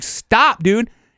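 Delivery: play-acted, high-pitched, hollered yell. Retelling yelling at a friend chasing it toward the wood line: retelling a yell. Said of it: "yelling at him, like".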